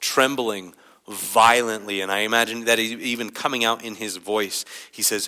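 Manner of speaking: ordinary delivery, nothing marked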